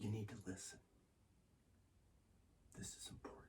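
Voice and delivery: firm, low whisper. Explaining how to speak with force and impact: lowered voice for force. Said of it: "by lowering my voice".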